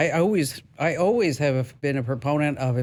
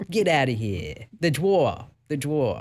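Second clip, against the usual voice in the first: swooping, put-on New York accent played for laughs. Teasing a caller about his accent: mock new york accent. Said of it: "your New York accent".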